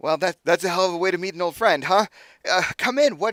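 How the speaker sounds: very loud, high, delighted voice with laughter. Narrator voices a grinning man welcoming an old friend, happy and laughing. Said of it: "he laughs and he's he's got this huge just grin".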